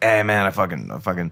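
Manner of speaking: put-on English with a Mexican accent, stumbling over words. Complaining about his guy messing up, imitating Gideon's Mexican accent. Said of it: "He has got a Mexican accent".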